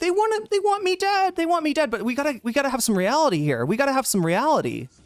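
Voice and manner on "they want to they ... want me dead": mock very high, blubbering, tearful sob. Imagining a chatter leaving in distress, mock crying. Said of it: "leave here crying, being like".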